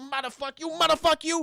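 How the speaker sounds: hammering, repeated, high-pitched burst of cursing. Retelling a scene where a man kicks the dad: Joe Pesci impression. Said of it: "doing like a Joe Pesci".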